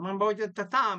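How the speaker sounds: put-on Italian accent. Talking about Tommy on a basketball podcast, put-on Italian accent. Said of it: "whenever I say Tommy, I have this Italian accent".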